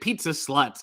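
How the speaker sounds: ordinary talk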